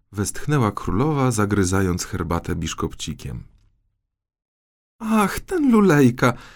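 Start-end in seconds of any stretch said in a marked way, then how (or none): 5.0-6.3 very high, scornful, dismissive laugh. A princess speaks of someone to the king and queen, laughing dismissively. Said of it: "zaśmiała się księżniczka i lekceważąco odrzuciła w tył głowę".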